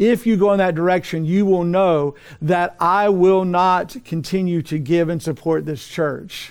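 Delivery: normal talking voice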